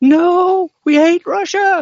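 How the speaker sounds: high, loud, slow, panicked mock outcry. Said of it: "They're like".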